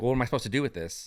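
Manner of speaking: mock displeased woman's voice, fast and unhappy. Retelling an unhappy woman's reply, imitating an unhappy woman. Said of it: "she's not happy".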